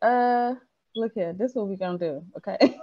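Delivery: normal talking voice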